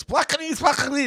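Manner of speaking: very high-pitched, loud burst of nonsense babble. Speaker recalls the loud guy they had, loud gibberish impression. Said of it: "the loud guy who was like".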